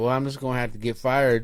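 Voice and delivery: ordinary talk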